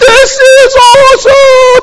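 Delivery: mock, very high, thrilled screaming with glee. Retelling friends in the car mid-air: imitating friends screaming. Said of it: "They're screaming".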